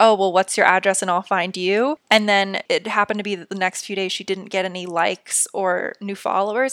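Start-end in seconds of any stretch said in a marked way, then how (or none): 0.0-2.0 mock-playful, put-on teasing tone. Retelling what a woman jokingly replied to a commenter, as a joking remark. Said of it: "She jokingly said like".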